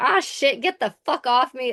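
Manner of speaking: mock screaming. Recapping a scene, the speaker acts out Cooper screaming. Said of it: "he's screaming".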